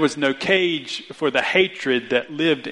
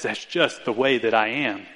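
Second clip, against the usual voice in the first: acted-out arrogance, mock-proud and arrogant tone; 4 semitones lower than usual. The speaker imitates someone who says that about themselves, arrogant voice. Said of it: "Can you hear the arrogance that's behind that voice".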